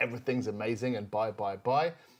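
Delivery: ordinary talk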